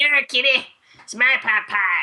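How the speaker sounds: put-on cartoon child voice. Talking about game characters, the speaker does a Cartman voice. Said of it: "There goes the extent of my voice acting".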